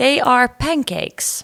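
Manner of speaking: Dutch-accented English. Talking about food from a dutch restaurant, slipping into a dutch english accent. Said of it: "why I've just gone into a Dutch English".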